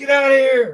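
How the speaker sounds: very high-pitched, yelling scream. Acting out how to scare off a bear or wolf: imitating someone screaming. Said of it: "This woman was screaming at this thing".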